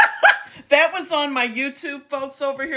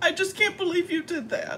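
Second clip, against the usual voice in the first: hammed-up high, rushed fake crying, near tears; 5 semitones higher, 8 dB quieter than usual. Playing someone hurt that a gift card was sold for cash: on the verge of tears. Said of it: "I'm going to cry".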